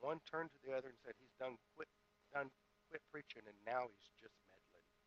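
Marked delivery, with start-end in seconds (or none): 1.2-4.9 quiet, hushed voice, as if said aside. Retelling a joke's punchline, one lady turning to the other: imitating someone speaking quietly. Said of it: "the two got very quiet".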